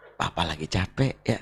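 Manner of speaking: low, soft, gentle cooing voice.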